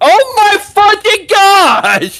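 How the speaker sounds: very loud, shrill, high, drawn-out swooping yell. Reacting to an initiative reroll: yelling. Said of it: "You don't need to yell".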